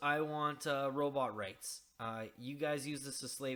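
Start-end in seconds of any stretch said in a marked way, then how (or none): none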